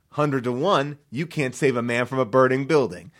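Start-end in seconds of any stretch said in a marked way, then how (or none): none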